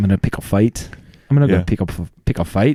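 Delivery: put-on Scottish accent. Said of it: "like William Wallace".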